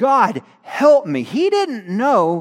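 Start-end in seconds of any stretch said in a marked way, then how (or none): 0.0-1.2 mock crying out, much slower. Telling a bible story, acting out a king crying out to god. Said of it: "and he cried out".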